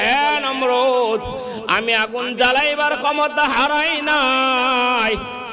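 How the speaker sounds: high, slow, proclaiming calling voice.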